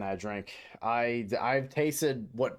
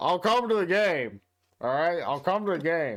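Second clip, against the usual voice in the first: mock drunk-sounding voice, higher; 5 semitones higher, 3 dB louder than usual. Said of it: "he's acting like a drunk".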